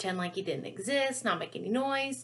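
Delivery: ordinary delivery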